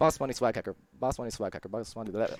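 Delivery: said really fast. Trying a chat username as a tongue twister: said really fast. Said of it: "I have to say them really fast".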